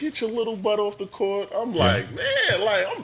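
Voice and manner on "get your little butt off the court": screaming, bullying yell. Telling how older players bullied the speaker on the court, imitating someone screaming. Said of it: "They screaming at me".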